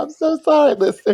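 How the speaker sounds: very high, loud, giggling, laughing speech. Apologizing to listeners while unable to stop: laughing while talking. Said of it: "Can't stop laughing right now".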